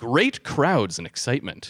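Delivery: ordinary talk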